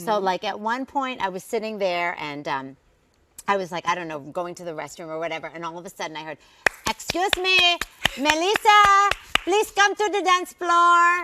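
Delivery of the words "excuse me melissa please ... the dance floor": put-on very loud, high, announcing Filipino accent. Retelling a call suddenly heard from the stage at a family event, filipino accent. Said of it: "That's my Filipino accent".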